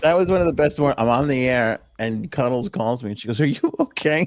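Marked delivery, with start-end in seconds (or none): 3.4-4.3 high, tearful, worried, crying voice. Retelling how Cuddles phoned while he was on the air, imitating Cuddles crying. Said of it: "She's crying".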